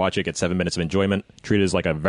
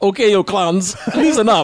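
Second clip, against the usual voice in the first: mock German accent, high and loud; 13 semitones higher, 7 dB louder than usual. Retelling a dubbed movie trailer line with a german accent. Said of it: "with a German accent".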